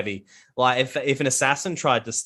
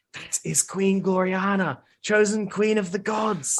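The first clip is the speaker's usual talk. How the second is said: whispering voice, higher-pitched; 8 semitones higher than usual. Voicing a character who points out the queen: whispering as Gaviziel. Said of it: "Gaviziel kind of whispers".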